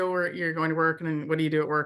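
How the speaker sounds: usual speaking voice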